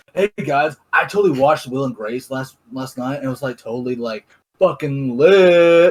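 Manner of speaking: plain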